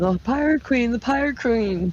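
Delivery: high, hollering yell. Playing a character warning everyone of the approaching ships: hollering. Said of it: "And just start hollering".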